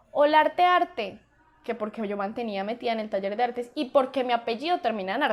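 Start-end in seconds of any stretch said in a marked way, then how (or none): 0.2-1.2 mock loud, high-pitched shouted call. Retelling how a friend looking for her called out: imitating a friend shouting. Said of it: "me gritó".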